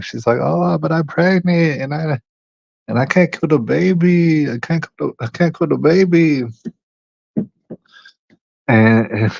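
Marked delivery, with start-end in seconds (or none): 0.4-6.4 high put-on Chinese accent, "baby" stretched. Retelling a woman's words from a phone call: imitating a Chinese accent. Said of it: "she's talking in her Chinese talk".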